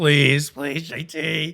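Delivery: very slow, drawn-out pleading scream. With the alarms blaring, begging jt, retelling own screaming. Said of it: "Just screaming".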